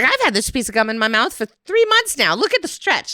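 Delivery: put-on girl voice with gum-chewing sounds. Retelling a movie scene, imitating Violet Beauregard bragging about her gum. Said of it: "She's like".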